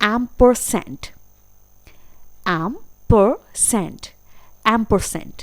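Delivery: American accent, ampersand said with the r sounded. Showing learners how to say the word: american accent pronunciation. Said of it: "अमेरिकन एक्सेंट में बोलेंगे".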